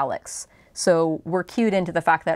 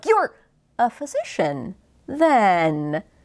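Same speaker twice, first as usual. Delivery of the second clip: awkward pause, slow, drawn-out "then"; 3 semitones higher than usual. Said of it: "he catches himself".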